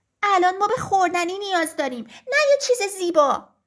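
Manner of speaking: distressed, upset, fussy, protesting tone. Narrator reading the hens answering the rooster, upset, making a fuss.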